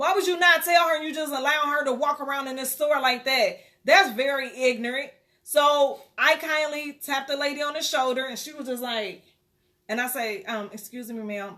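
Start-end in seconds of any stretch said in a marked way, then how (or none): 10.7-11.6 quiet whisper, much lower and quieter. Retelling tapping a lady on the shoulder in a store, real quiet. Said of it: "just real quiet in her".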